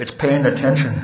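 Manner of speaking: muttered under one's breath. Retelling answering someone at a meeting who asks the topic, said under the breath. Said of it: "under my breath".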